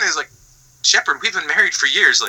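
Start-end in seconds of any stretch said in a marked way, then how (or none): none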